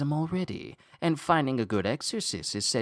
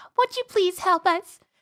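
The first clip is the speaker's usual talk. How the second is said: put-on cutesy girl voice, higher and louder; 6 dB louder than usual. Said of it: "she's using her cute".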